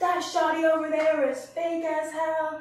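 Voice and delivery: mock male shouting. Retelling how a man shouted insults across a big building: imitating a man shouting. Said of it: "he just kept shouting at me".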